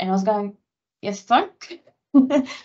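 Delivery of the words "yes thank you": put-on forced politeness through gritted teeth, pitched up. Retelling thanking the people helping with feeding, through gritted teeth. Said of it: "Through gritted teeth".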